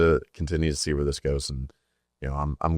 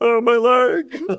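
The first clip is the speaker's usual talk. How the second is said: squeaky, very high, loud cartoon yelp; 7 dB louder than usual. Asked to do the SpongeBob guy, the speaker performs: SpongeBob 'my leg' guy impression. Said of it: "Could you do the SpongeBob guy?".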